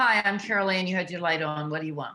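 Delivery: cold, indifferent tone. A nurse showing how not to greet a patient, in an uncaring tone. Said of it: "It's not".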